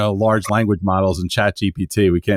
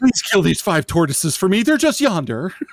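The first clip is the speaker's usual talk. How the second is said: pleading voice pitched very high; 11 semitones higher than usual. Reading a quest request from a game character: Princess Leia pleading voice. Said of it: "it always sounds like Princess Leia asking Obi-Wan Kenobi for help".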